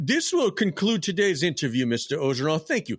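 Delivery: stuffy, snooty, high-pitched voice. Acting out a snooty university president greeting a coaching candidate at an interview: snooty university president voice. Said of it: "the president's gonna be walking in, suit and tie".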